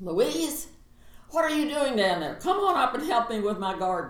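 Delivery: loud, high, booming, far-carrying call. Speaker imitates her mother's friend calling down to her apartment, imitating a booming voice. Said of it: "she had a booming voice".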